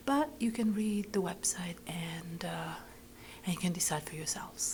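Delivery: hushed whisper. Ending a video to viewers late at night, whispering. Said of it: "I am whispering because it's very late".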